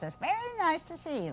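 very high-pitched character voice. Showing how the witch used to talk, in a Wicked Witch of the West voice. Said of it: "she talked like this".

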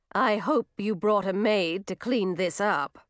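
ordinary delivery

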